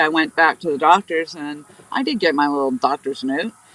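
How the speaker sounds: ordinary delivery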